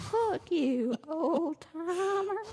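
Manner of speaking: put-on high, very slow, drawn-out old lady voice. Speaker shows off their old lady voice in a conversation. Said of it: "That's my old lady voice".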